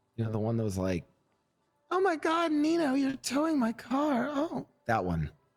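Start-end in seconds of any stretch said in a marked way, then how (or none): 1.9-4.7 put-on young woman's voice, very high, slow and drawn out. Asking the other speaker about a girl they towed for, imitating the girl. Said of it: "I did a great impression of her".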